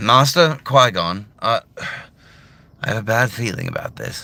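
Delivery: slightly nasal, younger hero voice. Showing a personal take on young Obi-Wan: younger Obi-Wan Kenobi voice. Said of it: "you get my Obi-Wan Kenobi".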